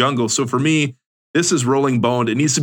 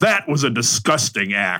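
put-on famous-person sportscaster impression. Imagining handing someone a paper towel, then commenting; Joe Buck voice. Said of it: "in a Joe Buck voice".

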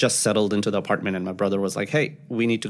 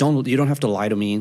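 mad, angry, shouted-out scream; 3 semitones higher, 3 dB louder than usual. Retelling how a cab driver screamed at a passenger: imitating a driver screaming. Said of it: "he kind of screamed at me".

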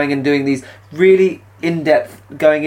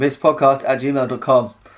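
flat, unenthusiastic delivery. Reading out the show's email address: flat, unenthusiastic.

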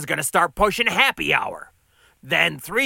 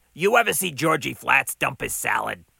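ordinary delivery

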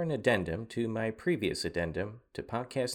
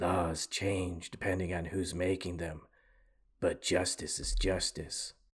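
deep, dropped-down hero voice; 4 semitones lower than usual. Quoting a stoic, by-the-book TV character's line, in a Batman voice. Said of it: "I realize I sound like Batman".

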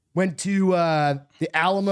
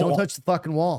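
normal talking voice

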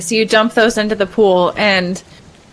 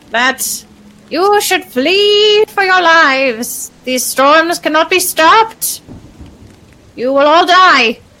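high ooze mephit creature voice, "flee" drawn out; 8 semitones higher, 4 dB louder than usual. Game master voicing an ooze mephit to the players, ooze mephit voice. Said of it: "This is an ooze mephit".

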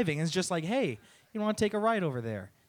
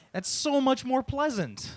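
ordinary delivery

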